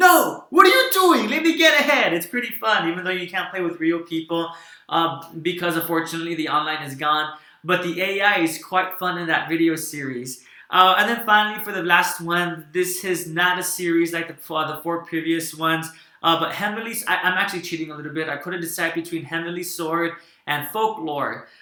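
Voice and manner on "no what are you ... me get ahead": high-pitched, loud, frustrated yelling. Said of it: "you're yelling at them".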